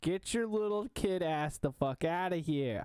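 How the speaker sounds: shouting. Telling viewers under eighteen to get out: yelling. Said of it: "I'm gonna stop yelling now".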